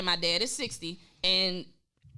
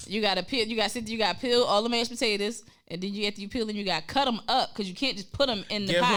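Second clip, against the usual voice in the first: plain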